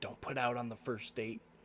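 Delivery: hushed, half-whispered stage aside. Half-whispering to a character walking past before her date: half-whispering in character. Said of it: "I'll whisper".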